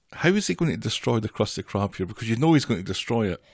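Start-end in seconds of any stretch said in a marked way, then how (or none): none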